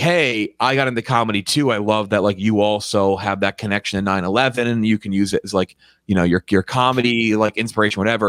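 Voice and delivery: ordinary talk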